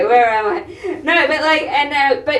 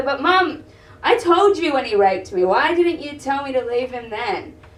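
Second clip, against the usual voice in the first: ordinary talk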